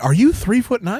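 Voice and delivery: high, squeaky gasp full of disbelief. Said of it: "and I was like".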